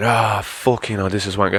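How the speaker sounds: grumpy, irritable tone. Showing how they talk when in a bad mood, in a bad mood. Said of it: "if I'm in a bad mood".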